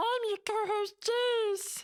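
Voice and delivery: very high little creature voice. Introducing oneself as co-host in a Gizmo impression. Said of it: "way to flex on Ryan with your Gizmo impression".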